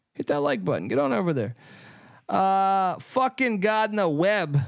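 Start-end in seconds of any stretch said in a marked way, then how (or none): 2.3-4.6 put-on Boston accent. Speaker watching a game names gardner webb, in a boston accent. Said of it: "I don't know why I said it in Boston accent".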